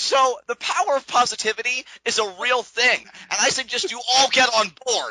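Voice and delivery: heated angry tone. Urging the viewers to get on board with positivity, angry-sounding. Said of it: "Why are you so angry at our viewers?".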